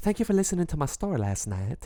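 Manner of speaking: put-on Eastern European accent. Redoing the line he said before: put-on Eastern European accent.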